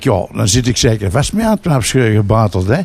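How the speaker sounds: ordinary delivery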